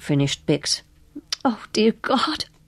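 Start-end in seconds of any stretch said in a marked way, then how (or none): 1.4-2.5 projected, high-pitched stage whisper. Narrator reads a carnival character reacting to news of a death, whispered. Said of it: "whispered Cardi".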